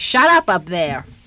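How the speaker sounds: loud, drawn-out yelling.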